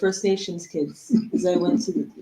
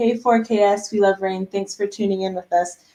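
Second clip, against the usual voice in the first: ordinary talk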